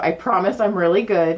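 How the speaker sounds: normal talking voice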